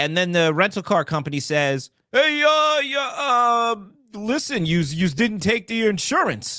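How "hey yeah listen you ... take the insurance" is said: put-on slow New York accent, pitched up. Telling a story, voicing the rental car company in a new york voice. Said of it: "I'm doing it in my New York voice".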